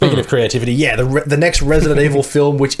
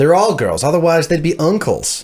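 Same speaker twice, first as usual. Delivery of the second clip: put-on American accent; 2 semitones higher than usual. Reading a joke's punchline aloud at the other speaker's request, in an American accent. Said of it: "for the flawless American accent".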